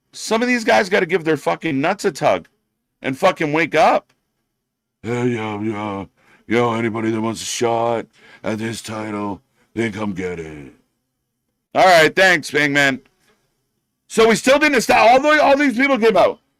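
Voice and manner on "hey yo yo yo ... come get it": mocking fake deep voice, low and slow. Mocking wrestlers who all put on a deep voice: mocking fake deep voice. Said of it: "everyone does the Deep Voice in this company".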